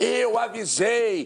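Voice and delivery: mock smug know-it-all, slow and drawn-out. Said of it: "ele fala".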